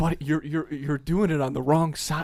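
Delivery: imitated whisper. Retelling warning a friend doing a pretend cooking show: retelling a whisper. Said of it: "I'm, like, whispering to him".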